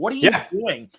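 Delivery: intense, confrontational voice. Retelling a juror confronting another who changed his vote: imitating an intense outburst. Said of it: "great intense moment after being so meek".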